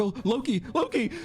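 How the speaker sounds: very high, panicked, frightened cry. Mocking a rival who wakes from nightmares: imitating waking from a nightmare. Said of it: "just waking up like".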